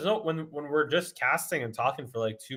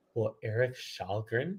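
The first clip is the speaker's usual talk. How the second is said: fake creepy, eerie voice, lower; 3 semitones lower, 4 dB quieter than usual. Repeating a question when asked to say it again: put-on creepy voice. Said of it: "That was creepy".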